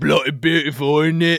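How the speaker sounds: very loud, put-on British accent. Hosts greeting a guest during a joke bit, fake British accent. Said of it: "We lost all our British listeners".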